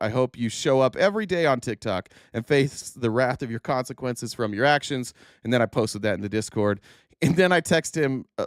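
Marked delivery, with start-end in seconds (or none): none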